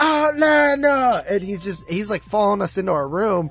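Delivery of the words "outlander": mock screaming at top of lungs, much higher pitch. Retelling a man following them through hotel hallways, mock screaming at top of lungs. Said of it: "he's screaming it at the top of his lungs".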